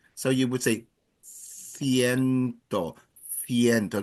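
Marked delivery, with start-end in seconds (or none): 1.3-4.0 Castilian Spanish accent. Showing learners how a number is said in Spain: Spain Spanish accent. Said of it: "So in Spain".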